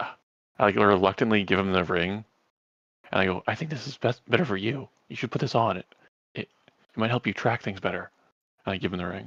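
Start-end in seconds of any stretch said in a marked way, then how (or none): 3.5-8.1 hushed, hesitant, reluctant, half-whispered tone. Speaking in character to Nyx while giving him a ring: half-whispering. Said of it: "I'm gonna whisper to Nyx".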